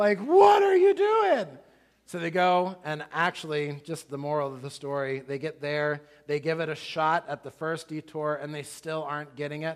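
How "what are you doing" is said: very high, very loud, slow scream. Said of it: "Carrie and I are screaming at the television".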